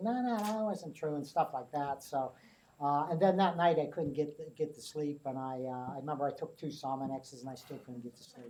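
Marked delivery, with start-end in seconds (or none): 0.0-1.2 high, piping, protesting voice. Recalling a man who kept interrupting an interview, imitating a high-pitched voice. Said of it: "He had this real high pitched voice".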